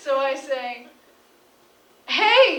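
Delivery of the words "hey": acted-out high, loud scream. Retelling yelling from a balcony at a fighting couple: imitating own screaming. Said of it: "and I'm screaming that".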